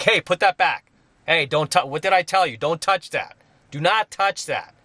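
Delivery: stern, authoritative tone. Describing how they talk to kids who touch things: raised, firm authoritative voice. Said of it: "I raise my voice very firmly and in a very authoritative tone".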